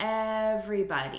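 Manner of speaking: everybody with stress on first syllable ev-. Teaching syllable stress in a greeting, stress on first syllable of everybody. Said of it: "So we're stressing the first syllable".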